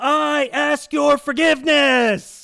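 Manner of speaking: aggressive, high, loud, slow delivery.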